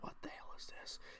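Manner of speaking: stunned, breathy whisper of disbelief.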